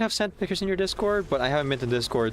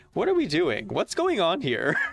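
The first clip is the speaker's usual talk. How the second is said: most mocking sing-song tone with big swooping pitch swings; 4 semitones higher than usual. Quoting a phrase stuck in their head from an SNL sketch: mocking Tucker Carlson impression. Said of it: "in, like, the most mocking tone".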